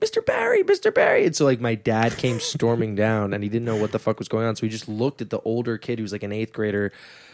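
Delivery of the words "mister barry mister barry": put-on child's rough scream, very high and very slow. Retelling a kid being held up for money, imitating a kid screaming. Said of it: "the kid started screaming".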